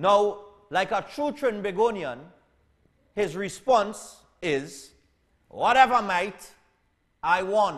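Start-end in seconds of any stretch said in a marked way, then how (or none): 5.5-7.8 loud put-on Australian accent. Quoting a Trinbagonian's response to a rant, in an Australian accent. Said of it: "I say that in an Australian accent".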